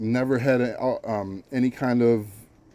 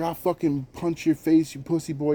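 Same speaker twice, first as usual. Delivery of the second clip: mock-aggressive threatening shout, higher pitch; 5 semitones higher than usual. Retelling what a kid in a car shouted at him, retelling a threatening shout. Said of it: "shouted out a verbal".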